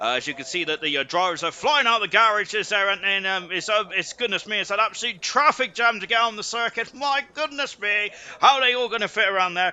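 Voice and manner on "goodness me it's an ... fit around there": high-pitched, heavily sarcastic mock amazement. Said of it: "I'm being very sarcastic there".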